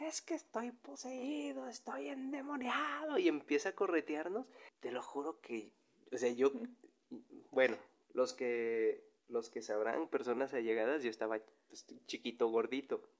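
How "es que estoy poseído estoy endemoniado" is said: mock very high, shrill schoolyard kid's yell. Retelling a classmate at recess acting possessed: imitating a friend shouting. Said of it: "el morrito empieza a gritar".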